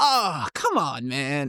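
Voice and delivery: very slow, drawn-out, laid-back, dismissive. Retelling how Biden answered a question about the borders: Joe Biden impression. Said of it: "One thing I loved about Biden".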